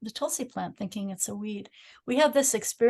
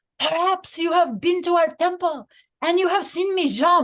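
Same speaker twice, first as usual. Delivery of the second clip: raised, put-on French accent in English; 8 semitones higher, 6 dB louder than usual. Imitating a man talking to people on a Montreal street: imitated French accent. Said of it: "He would say in his French accent, this is my imitation".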